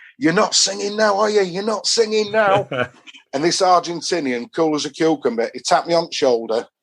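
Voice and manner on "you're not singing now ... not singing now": acted-out cheeky, high-pitched taunting banter shout. Retelling shouting at an Argentinian after Sol Campbell scored, retelling his own shouting. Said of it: "I'm shouting to him".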